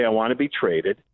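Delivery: ordinary talk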